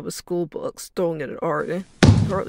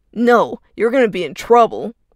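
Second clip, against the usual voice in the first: very loud, shrill, snarky tone; 5 semitones higher, 8 dB louder than usual. Running away, a kid snarks back at a man pleading to stop. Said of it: "Arden snarked back".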